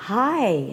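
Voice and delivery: very slow, careful, word-by-word speech. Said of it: "You were speaking very slowly".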